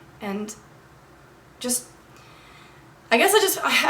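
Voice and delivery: stuttering and mumbling. Urging listeners to consider others' feelings, stuttering and mumbling over your words. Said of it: "I'm like stuttering and mumbling over my words".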